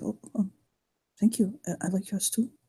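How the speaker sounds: speaking very softly. Playing a character thanking someone who complimented his hair, very soft voice. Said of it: "he'll say very softly".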